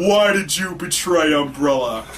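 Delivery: deep, synthesizer-like disguised voice-changer voice. Retelling a scene, the speaker quotes Jill questioning Alice in a deep voice-changer voice. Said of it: "She's got the deep voice going on".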